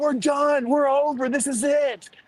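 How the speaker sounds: acted, high, mild, held-back angry man's yell. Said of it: "He's screaming at her".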